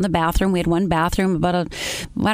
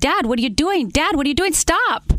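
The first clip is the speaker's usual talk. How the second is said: terrified, frantic, high, panicked screaming; 9 semitones higher than usual. Retelling being fourteen and screaming at their dad after he fired, retelling a scream. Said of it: "I just start screaming".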